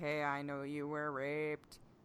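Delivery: soft, toneless, dead-level, flat monotone. Discussing a TV scene, quoting Bran's words to another character in Bran's monotone voice. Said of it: "Bran being monotone, being like".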